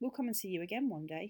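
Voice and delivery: ordinary talk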